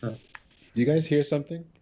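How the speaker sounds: feigned innocent, oblivious tone, high pitch, slow pace. Playing Raylan, who ignores someone calling him: pretending not to hear. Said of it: "Raylan pretends like he doesn't hear her".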